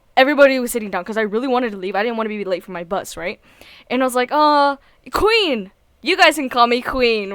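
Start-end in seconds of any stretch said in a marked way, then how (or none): 5.1-7.4 very confident, self-assured, sarcastic proclaiming voice. Retelling standing up while the club sat, confident sarcastic voice. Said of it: "I said it in this really like this this very confident, like sarcastic voice".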